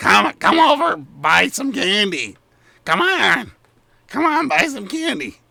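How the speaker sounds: very high, eager, excited goblin voice calling out. Running a game as players approach the stalls: excited goblin calling out. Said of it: "the goblins look very uh, excited, and you hear one of them call".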